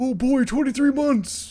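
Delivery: put-on voice pushed very high and loud. Greeting a viewer about twenty-three months, doing a Patrick impression. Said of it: "That was my Patrick impression".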